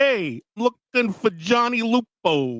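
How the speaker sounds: bad put-on New York accent. Imitate a movie's New York cop going into a bar and speaking in the worst New York accent. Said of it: "the worst New York accent anybody could have".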